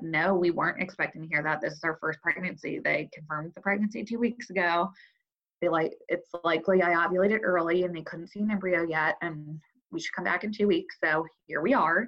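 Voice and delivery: acted-out pointed, sardonic, snarky tone. Retelling a curt reply to a stranger at the exam: imitating own snarky voice. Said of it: "snarky voice".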